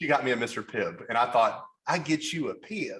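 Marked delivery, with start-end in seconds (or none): 1.9-3.0 very drawn-out, slow southern drawl. Retelling a restaurant worker's reply at the window: imitating a southern accent. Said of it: "I'll never forget that accent".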